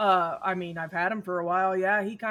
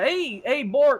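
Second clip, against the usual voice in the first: put-on raised, high-pitched Minnesota accent; 6 semitones higher, 6 dB louder than usual. Voicing a massive Klingon who calls to Bork: Minnesota accent. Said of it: "With a Minnesota accent".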